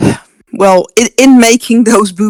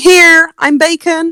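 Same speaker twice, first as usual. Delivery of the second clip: put-on pig screaming, higher; 9 semitones higher than usual. Retelling how Porky kept screaming in a cage: imitating Porky screaming. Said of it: "just kept screaming".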